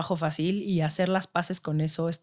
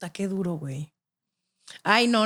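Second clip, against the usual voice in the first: voice holding back tears, close to crying; 2 semitones higher than usual. Reacting to a story about a father who died, holding back tears. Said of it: "no voy a llorar".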